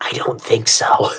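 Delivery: fake stage whisper, hushed, breathy and theatrical. Voicing a character leaning in very close: fake whisper. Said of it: "fake whisper interior".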